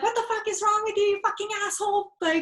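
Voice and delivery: high-pitched, shrill, loud, furious screaming. Describing a film scene where a woman screams at a departing car: imitating Grace screaming. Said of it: "she's just screaming at the car".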